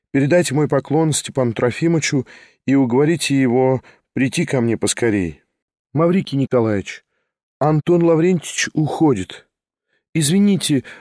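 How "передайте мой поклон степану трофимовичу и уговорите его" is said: ordinary delivery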